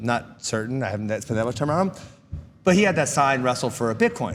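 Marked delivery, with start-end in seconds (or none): none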